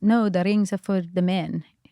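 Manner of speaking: put-on English spoken with an Israeli accent. Retelling what the woman at the ring stall answered, in her best Israeli accent. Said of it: "this is my best Israeli accent".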